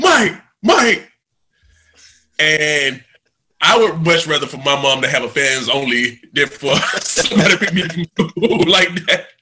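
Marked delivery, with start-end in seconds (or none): 0.0-1.1 play-acted shrill, very high yelling. Retelling how a man picking him up from school yells his name, imitating someone yelling a name. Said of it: "yelling like".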